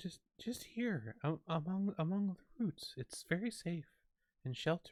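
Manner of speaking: barely audible, faint, very high voice. A game master voices something hidden among tree roots calling the players, faint voice. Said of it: "this faint voice".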